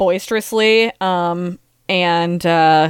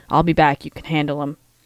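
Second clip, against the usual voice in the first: hushed whispering; 4 semitones lower than usual. A player's character leans over to a woman in a game scene, leaning over to whisper. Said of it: "lean over and whisper".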